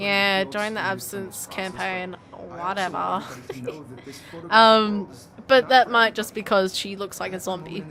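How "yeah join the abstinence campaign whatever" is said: slow, quiet, downward monotone. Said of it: "like, monotone and down".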